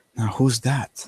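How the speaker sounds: startled, shocked, hushed half-whisper. Narrator voices a shocked character asking the barman about a woman, half-whispering. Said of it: "as he whispers to the barman".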